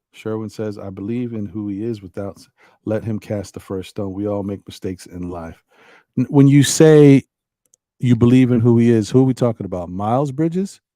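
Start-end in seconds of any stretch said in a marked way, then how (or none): none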